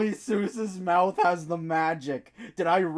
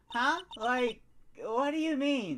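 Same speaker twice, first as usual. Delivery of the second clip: put-on teenage girl voice, higher and quieter; 6 semitones higher, 5 dB quieter than usual. Voicing a game character asking what is meant: stereotypical teenager voice.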